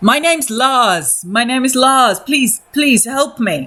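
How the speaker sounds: high-pitched, panicked, desperate, pleading scream. A game master voices a man backed against a wall, screaming for help. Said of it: "He's just screaming for help".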